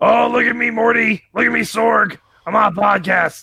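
rough, creaky, cartoon-style voice. Asked on a podcast to do the Rick voice, Rick voice. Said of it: "can you do the Rick voice?".

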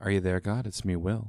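soft asmr-style voice. Jokingly speaking into a listener's ears: asmr voice. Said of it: "I'm doing A S M R right in your ears".

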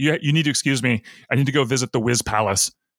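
ordinary talk, nothing marked

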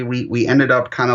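ordinary delivery

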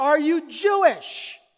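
screamed loudly, again and again. Retelling how a stranger on the street called out: imitating a man screaming. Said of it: "And he screams again".

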